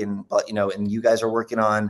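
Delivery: ordinary delivery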